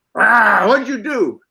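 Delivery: drawn-out growl. Retelling a take on set, the speaker repeats what they said to the cat: retelling a growl. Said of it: "I growled".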